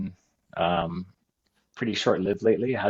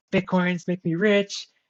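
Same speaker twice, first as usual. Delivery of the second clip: frantic shrieking, voice way up high; 10 semitones higher than usual. Telling about nerdy kids on TV, imitating kids screaming. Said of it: "they're just like screaming on television".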